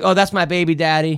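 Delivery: ordinary talk, nothing marked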